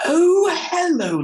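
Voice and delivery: exaggerated posh RP English accent, shrill and very high-pitched. Mimicking a pet peeve, an over-formal overstretched accent heard in others, in an exaggerated posh accent. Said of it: "it's a high R P accent".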